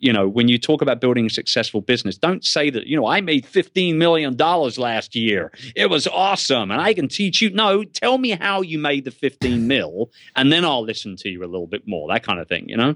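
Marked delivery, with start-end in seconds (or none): 3.1-7.5 put-on American accent, pitched higher. Giving advice on pitching a business, quoting a typical claim in a put-on American accent. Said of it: "Did you just slip into an American accent right there?".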